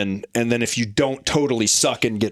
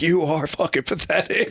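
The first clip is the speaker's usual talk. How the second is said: taunting drill instructor voice, higher pitch; 5 semitones higher than usual. Retelling how an NCO taunted recruits during a run: imitating an NCO insulting recruits. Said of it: "just talking shit the entire time".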